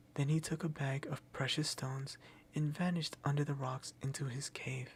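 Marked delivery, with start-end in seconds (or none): none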